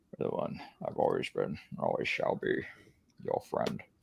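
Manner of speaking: mock gravelly actor voice. Quoting a film line for the others: Leonard Nimoy impression. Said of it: "not my best impression of Leonard".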